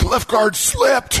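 goofy, high-pitched caricature voice. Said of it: "that's my Twitter voice".

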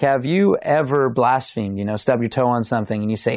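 ordinary talk

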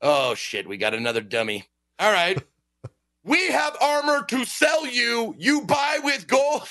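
high, sing-song, condescending talking down. Speaker acts out a shopkeeper selling armor to you: mock condescending shopkeeper. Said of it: "they'll fucking talk to you like you're a fucking moron".

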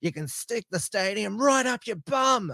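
aggressive, angry bogan voice, pitched very high. Retell what she said at an anti-stadium rally in an aggressive, angry Jacqui Lambie bogan voice. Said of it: "very aggressive, angry Bogan voice".

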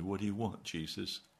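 speaking very softly. Retelling his own reply to Jesus, very soft. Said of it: "I said very softly".

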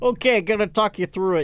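put-on broad New England accent. Retelling a coworker's reply on a night phone call: imitating Dwight's thick New England accent. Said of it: "that thick New England accent".

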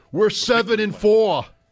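put-on angry fan voice. Watching the Jets game, doing a mock-angry Jets fan voice. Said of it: "That was my Jets fan voice".

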